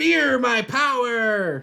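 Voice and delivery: high-pitched, loud, scolding yell. Narrating a game scene where a figure scolds the others: yelling. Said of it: "starts yelling".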